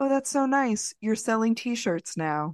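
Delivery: serene, polished, calm, elegant and gracious tone. Retelling Lou's reply to being handed t-shirts, imitating Lou, calm and elegant. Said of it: "so calmly and so freaking elegantly".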